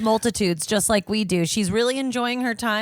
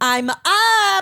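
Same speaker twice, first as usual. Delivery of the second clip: shrill, very high-pitched bitchy voice; 10 semitones higher, 7 dB louder than usual. Acting out someone waking up, imitating a bitchy mom. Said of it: "He's like a bitchy mom".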